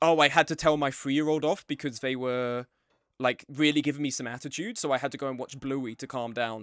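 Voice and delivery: ordinary talk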